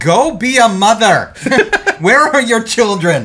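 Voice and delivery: high, loud, laughing mock shout.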